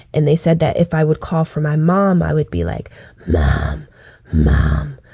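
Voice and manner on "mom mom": very low, rasping truck-driver voice. Acting out calling for mom the way others described it, imitating a raspy throat voice. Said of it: "I would sound like a truck driver and that my throat was raspy".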